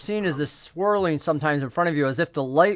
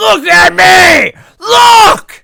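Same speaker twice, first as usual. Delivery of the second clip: very loud, high, shrill, demanding shout; 16 dB louder than usual. Narrating a scene, a woman's voice behind the player starts shouting in their ear. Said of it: "And it starts shouting in your ear".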